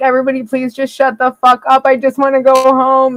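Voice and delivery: high, crying, tearful pleading voice. Retelling begging drunk passengers to stop, imitating own crying plea. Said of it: "I'm just sitting there, like, crying".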